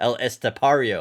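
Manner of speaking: name said the plain American way, loud. Unsure how to pronounce a name, saying it with American accent. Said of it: "We can say it like an American".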